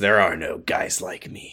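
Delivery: whispered, hushed, breathy, edgy edgelord delivery. Retelling a conversation and quoting what a man said, edgelord voice. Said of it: "I was doing a bit of a like an edgelord voice".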